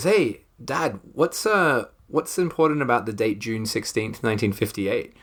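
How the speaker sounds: casual, nonchalant, offhand, uninterested tone. Retelling Georgia asking her dad about a date: imitating Georgia, nonchalant. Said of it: "very nonchalantly just goes".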